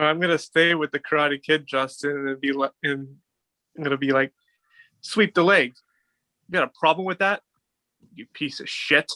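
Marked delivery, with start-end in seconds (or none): 5.0-9.1 audible anger right in the voice. Trading favorite movie quotes, staying with The Karate Kid: mock-angry The Karate Kid quote. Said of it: "I love the anger in your voice".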